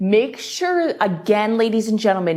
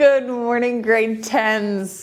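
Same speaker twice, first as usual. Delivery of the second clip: laughing, drawn-out words broken by laughter; 3 semitones higher than usual. Greeting the grade tens as a live class begins, laughing. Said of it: "I'm laughing because the phone just went off".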